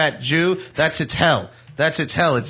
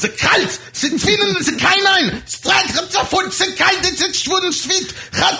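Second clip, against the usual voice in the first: fake German yelling, much higher. Recounting yelling at a dog, screaming in fake German. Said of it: "I screamed at it in fake German".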